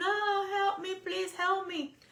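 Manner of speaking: very high, drawn-out screaming, crying sob. Retelling a trapped woman's call to her husband: imitating a woman screaming, crying. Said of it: "And she's screaming, crying".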